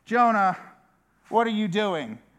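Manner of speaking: acted forceful voice, not gentle at all. Speaker imagines the captain waking Jonah: forceful, not gentle. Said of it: "It's not a monotone or a gentle voice".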